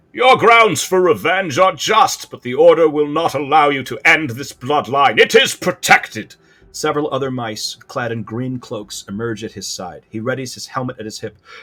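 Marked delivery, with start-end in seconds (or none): 0.2-6.4 very loud, resounding, booming voice, pitched up. Narrator voicing a small mouse character, in a booming voice. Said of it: "here's a booming voice".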